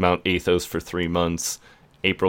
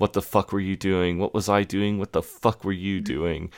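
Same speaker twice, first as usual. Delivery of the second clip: put-on angry, heated arguing. Retelling a couple fighting in the background: imitating an angry argument. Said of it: "kind of arguing".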